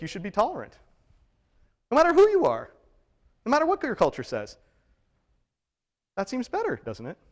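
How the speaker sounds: high, sing-song, heavily inflected lilting voice. Stating what moral realism says to the listeners: high voice with inflection. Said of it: "High voice and inflection aside".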